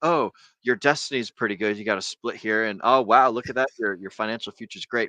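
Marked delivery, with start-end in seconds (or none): none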